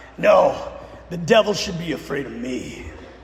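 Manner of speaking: put-on voice of a longtime old smoker. Retelling a man's answer to a reporter's question, in an old smoker voice. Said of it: "He kind of had one of those old smoker voices".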